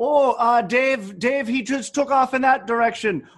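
put-on Minnesota accent. Joking with friends about a stranded snowmobiler, in a put-on Minnesota accent. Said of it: "What fucking accent is that?".

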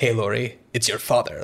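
mock overly exact, precise delivery. Retelling a movie scene where a character rehearses a line: imitating a very accurate line reading. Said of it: "like, very accurately".

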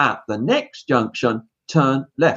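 calm, even, reassuring sat-nav announcement voice. Imitating a car's GPS giving directions: imitating a calm, reassuring GPS voice. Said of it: "in a calm, reassuring voice".

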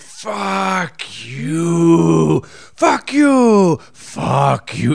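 very slow, very drawn out, simmering seething rage. Retelling a man yelling at the bartender at the end, mock-seething and slow. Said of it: "He was doing slow fuck yous at the end, ... Just seething".

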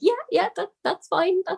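squeaked-out words. Recalling answering him when he asked if it was okay, retelling a squeaked reply. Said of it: "I sort of like squeaked out".

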